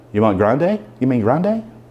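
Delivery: plain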